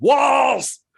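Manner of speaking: loud shouted voice.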